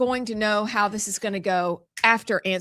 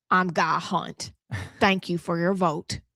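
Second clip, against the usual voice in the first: put-on southern politician voice, lower; 3 semitones lower than usual. Answering how a former governor talked, imitating Guy Hunt. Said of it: "How did he talk?".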